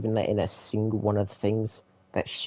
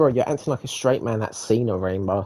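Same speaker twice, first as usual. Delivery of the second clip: ordinary talk, nothing marked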